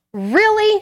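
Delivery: high, indignant tone. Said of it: "And she went".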